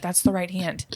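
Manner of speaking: quiet whisper. Retelling the officiant's correction during the ring exchange, the speaker repeats it in a whisper. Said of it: "like whispering to me".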